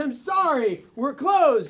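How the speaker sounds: plain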